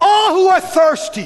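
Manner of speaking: full-throated shout, very loud and very high. Telling a story of a voice standing up in a crowd, retelling a shout. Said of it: "it wasn't quiet, it was a shout".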